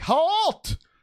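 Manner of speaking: shrill, high, loud shout. Voicing a character who steps up to stop the machines: yelling. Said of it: "he's like".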